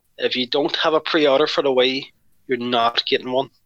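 plain

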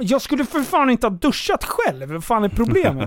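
mock-furious, acted angry outburst. Retelling what the speaker snapped at the people moving them, retelling an angry outburst. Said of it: "Så jag är skitarg där".

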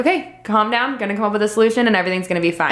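ordinary delivery

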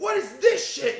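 shrill, very high and very loud screaming. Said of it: "my dad screaming at me".

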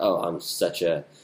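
ordinary talk, nothing marked

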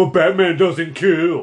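sneering, mocking, loud, high jeering taunt. Recalling a Batman scene with missiles aimed toward the Joker, retelling a mocking remark. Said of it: "in a very mocking type voice was like".

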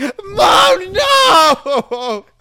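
put-on blood-curdling scream. Retelling a scene where a character falls to her knees: imitating a blood-curdling scream. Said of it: "a blood-curdling scream".

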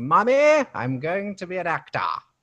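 booming, shrill, very loud put-on British accent, swooping. Retelling own childhood words to mom about acting: british accent. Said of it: "Had a British accent just like that".

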